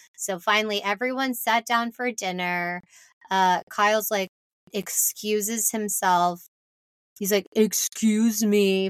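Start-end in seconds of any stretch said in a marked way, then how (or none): 7.5-8.9 slurred, put-on drunk voice. Retelling how Kyle excused himself at dinner, imitating Kyle's drunk slur. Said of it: "in the most slurred way you could envision".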